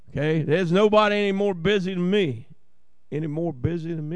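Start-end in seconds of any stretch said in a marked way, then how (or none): 3.1-4.1 fast, soft voice full of doubt. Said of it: "Is that right? It didn't sound right".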